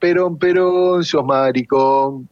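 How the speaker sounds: mock drunken shouting. Retelling a drunk woman yelling at a man, retelling a drunk shout. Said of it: "cuando venía borracha le gritaba".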